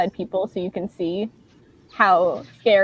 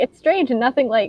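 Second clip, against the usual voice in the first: ordinary talk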